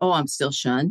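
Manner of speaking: ordinary talk, nothing marked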